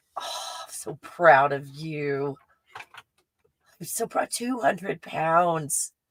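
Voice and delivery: choked-up voice on the verge of crying. Reacting to a viewer's weight loss comment, about to cry. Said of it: "I'm about to cry".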